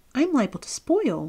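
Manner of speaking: high, protesting, objecting tone. Narrator voicing a character objecting to his companions, protesting. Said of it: "protested Jack".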